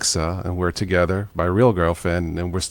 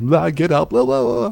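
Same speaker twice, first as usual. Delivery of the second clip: rough, raspy, pitched-up action-star voice; 11 semitones higher than usual. Imagining being woken up, the speaker does an Arnold Schwarzenegger impression. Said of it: "doing Arnett Schwarzenegger".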